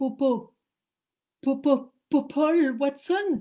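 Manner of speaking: panicked, very loud, high-pitched frightened stammer. Retelling a phone call she hung up on: retelling her fearful stutter. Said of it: "Je bégaye de trouille".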